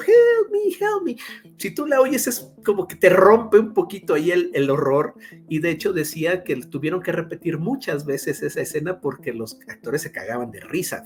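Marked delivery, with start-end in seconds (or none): 0.0-1.2 put-on tiny screaming voice, much higher, slower. Describing the fly caught in the spider's web, the speaker does its tiny screaming voice. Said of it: "se oye la vocecita que está gritando".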